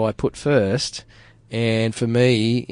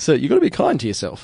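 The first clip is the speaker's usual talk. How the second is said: put-on, odd American radio announcer voice; 4 semitones higher than usual. Co-host joking about sounding like a self-help guru, weird American radio announcer voice. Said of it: "in like some weird American radio announcer".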